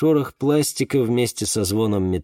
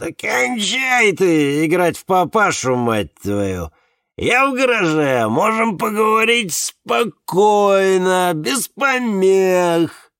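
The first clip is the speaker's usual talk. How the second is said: put-on very high, drunken speech, "помех" drawn out; 9 semitones higher, 4 dB louder than usual. Narrator reads a man's reply to his brother's questions, in a drunk voice. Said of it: "отозвался Давид пьяным голосом".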